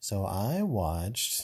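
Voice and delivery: flat delivery with zero enthusiasm. Jokingly using an 'excited voice' to start talking about movies: deadpan. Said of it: "That's your excited voice".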